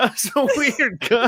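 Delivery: talking through laughter. Reacting to a clip with another speaker, laughing while talking. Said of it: "I'm laughing too hard".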